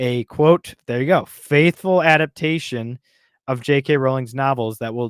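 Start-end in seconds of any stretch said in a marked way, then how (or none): none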